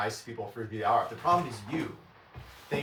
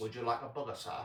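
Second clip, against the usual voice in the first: mock mealy-mouthed British accent, quieter; 6 dB quieter than usual. Mocking the british accents they dislike, in a mealy-mouthed british accent. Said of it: "I don't like mealy mouth British accents".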